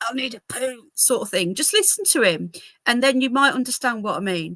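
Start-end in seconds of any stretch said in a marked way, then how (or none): 0.0-0.8 mock straining voice, higher pitch. Imitating the speaker from the played clip: imitating a constipated strain. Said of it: "you can just imagine him like".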